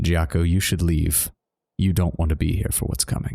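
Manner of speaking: leaned-in stage whisper, dropped low and close. Leaning in close to speak into another character's ear, half-whispering. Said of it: "lean in close and whisper in Giaco's ear".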